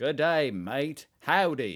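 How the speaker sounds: very loud, high-pitched, bad Australian accent attempt. Speaker admits being bad at accents, then tries a bad australian accent attempt. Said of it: "Okay, Australian, Australian".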